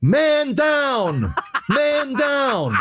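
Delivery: put-on very high yell, swooping down, dragged out. Retelling a big fall, the speaker acts out the voice he heard; imitating Hugh Breedlove Millen yelling. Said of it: "the voice is yelling".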